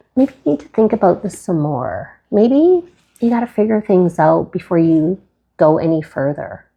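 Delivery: put-on whispering voice. Describing a tarot card's inner voice as the hermit: hermit card whispering. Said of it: "the hermit will whisper to me".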